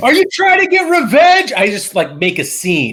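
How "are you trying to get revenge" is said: high, shrill scream at the top of the lungs. Voicing a character confronting a suspicious man: in-character screaming. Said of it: "screaming at him".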